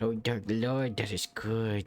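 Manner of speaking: put-on cartoon kid voice. Voicing a cultist eating cake: Cartman voice. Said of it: "you sound like fucking Cartman when you're voicing the cultist".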